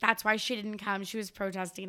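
normal talking voice

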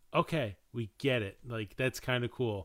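ordinary talk

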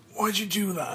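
raspy, rough-throated voice. Frank speaks to the fairy, hoarse.

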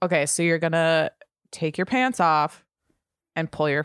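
condescending, over-explaining tone, talking down. Showing another speaker how mansplaining should sound, condescending mansplaining tone. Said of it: "It should be a little more like".

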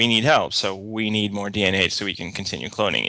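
ordinary talk, nothing marked

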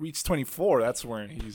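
ordinary delivery

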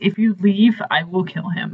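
normal talking voice

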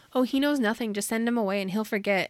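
usual speaking voice

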